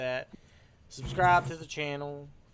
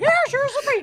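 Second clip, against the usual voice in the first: shouted way up high and loud; 13 dB louder than usual. Joking about a subpoena from Disney: Mickey Mouse impression. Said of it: "That's my best Mickey Mouse impression".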